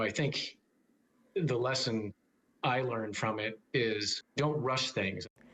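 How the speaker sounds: choked up, voice breaking mid-phrase, slow and halting. Reflecting on the lesson learned from being scammed: a little choked up. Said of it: "I'm getting a little choked up right now".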